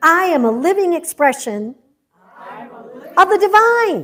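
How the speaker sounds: livelier, fuller gusto. Speaker leading a crowd in an affirmation, repeating it with more gusto. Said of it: "with a little more gusto".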